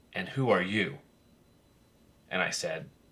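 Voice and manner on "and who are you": put-on stern, patrician voice. Retelling how a legendary figure turned to him as he sat down, imitating a stern, patrician voice. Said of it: "in that stern, patrician voice of his".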